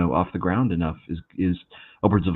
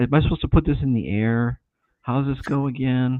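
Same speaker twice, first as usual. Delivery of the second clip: put-on confused voice, higher; 5 semitones higher than usual. Retelling a customer's questions while mocking them: imitating a confused customer. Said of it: "it's just like".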